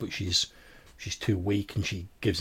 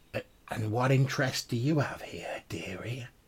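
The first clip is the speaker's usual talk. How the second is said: put-on speaking in an old crone's voice; 4 semitones higher than usual. Voicing a crone who questions the players: old crone voice. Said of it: "the crone looks at you and says".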